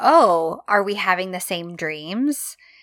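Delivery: ordinary delivery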